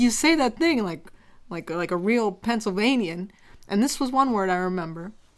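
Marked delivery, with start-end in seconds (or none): none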